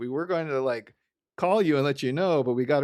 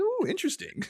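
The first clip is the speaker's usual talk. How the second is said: put-on excited voice, higher; 3 dB quieter than usual. Quoting a cartoon scene where Homer reads a magazine: imitating excited Homer Simpson. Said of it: "he's all very excited about it".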